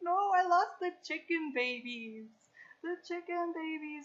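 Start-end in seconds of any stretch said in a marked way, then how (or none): 0.0-2.3 mock sobbing, higher pitch and louder. Retelling a phone call with mom, retelling sobbing speech. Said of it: "like that crying where you can barely talk".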